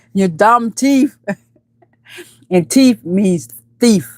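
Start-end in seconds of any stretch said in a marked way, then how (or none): 0.2-1.2 put-on Jamaican accent, damn pronounced like dumb. Quoting a man who called someone a dumb thief, Jamaican accent. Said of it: "he has that Jamaican accent".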